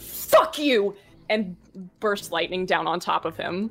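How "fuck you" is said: enraged, high-pitched shout with spittle flying. Voicing a character screaming down at a captain: furious shout. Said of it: "spittle just flies out of his mouth as he goes".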